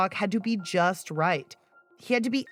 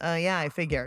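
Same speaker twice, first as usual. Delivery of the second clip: put-on blunt delivery, pitched lower; 4 semitones lower than usual. Reenacting the teen boy's reply in a reenactment: imitating Jacob's blunt reply. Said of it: "taken aback by Jacob's bluntness".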